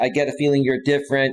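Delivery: plain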